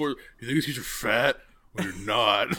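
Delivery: put-on mean-sounding male voice. Quoting a movie character while discussing a funny scene, imitating a mean-sounding guy. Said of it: "it's like he sounds mean".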